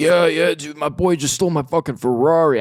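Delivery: high, wild, unhinged, off-the-hinges outburst. Telling how a guy set up a story to rip their vape: imitating an unhinged guy. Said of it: "I could tell he was off the hinges".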